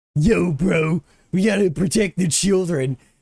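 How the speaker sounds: put-on high-pitched cartoon character voice. Speaker showing the voice they always do, in a Muscle Man voice. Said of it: "doing the muscle man voice".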